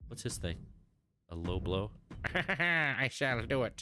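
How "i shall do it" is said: high, very slow villain voice, I stretched out. Choosing to play as Skeletor, the speaker attempts his voice: Skeletor voice. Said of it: "It's a fun voice to attempt".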